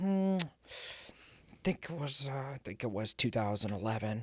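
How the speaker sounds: imitated weak voice. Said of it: "He's got this, like, frail voice".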